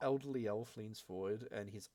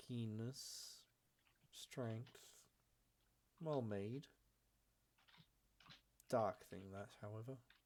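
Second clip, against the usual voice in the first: put-on soft, very elderly, ancient-sounding elf voice; 5 dB quieter than usual. Narrating a scene where an elderly elf inspects a blade, very elderly elf voice. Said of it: "a very, very elderly male elf comes forward".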